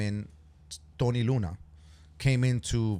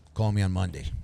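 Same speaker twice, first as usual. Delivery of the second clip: put-on suave voice, pitched lower; 4 semitones lower than usual. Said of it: "It's very like, like James Bond".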